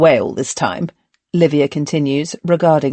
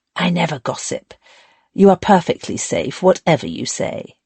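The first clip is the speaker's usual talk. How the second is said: hushed, secretive, confiding, conspiratorial whisper; 3 semitones higher than usual. Reading a character confiding a secret to a friend: conspiratorial whisper. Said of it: "she lowers her voice to a conspiratorial whisper".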